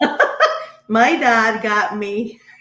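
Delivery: loud talk, words broken up by laughter. Answering an interviewer's question about his past, laughing while talking. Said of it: "sorry, I'm laughing".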